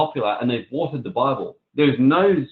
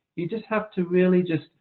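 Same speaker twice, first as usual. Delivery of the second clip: meek, timid, high-pitched little voice; 6 semitones higher than usual. Speaker shows how a meek guy would sound saying this: meek little guy voice. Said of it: "If I talk like a little meek guy saying".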